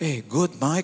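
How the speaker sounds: starstruck, dumbstruck, bumbling, foolish-sounding speech. Speaker recounts answering their idol Mike at age 22: mock-dumbfounded reply. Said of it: "Sampai kayak orang bego ngomongnya kan".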